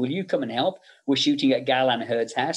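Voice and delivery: plain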